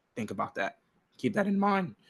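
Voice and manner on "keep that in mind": voice cracking and breaking, pitched up. Mid-explanation, the speaker keeps talking with his voice cracking. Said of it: "my voice is cracking".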